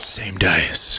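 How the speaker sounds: whispered words. Retelling what was whispered after throwing the dice into the pool, retelling a whisper. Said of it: "and whispered".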